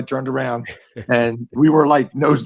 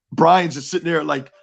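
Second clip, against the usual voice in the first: ordinary delivery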